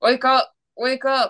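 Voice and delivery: forced through clenched teeth, high and slow. Retelling sleep paralysis, trying to wake their partner, speaking through teeth. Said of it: "Speaking through my teeth".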